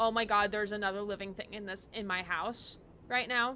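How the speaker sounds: plain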